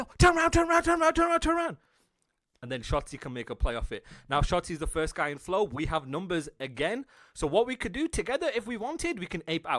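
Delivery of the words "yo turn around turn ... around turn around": very high, loud screaming, over and over. Describing a teammate who has just spawned: imitating someone screaming. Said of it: "he's screaming".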